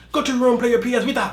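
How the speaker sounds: very high put-on Chinese accent, scolding tone. Showing how a parent might tell off their kids, mock-scolding in put-on Chinese accent. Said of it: "like something like a Chinese person will say to their kids".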